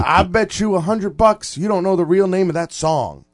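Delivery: loud, high-pitched, drawn-out drawl. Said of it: "He's got a drawl".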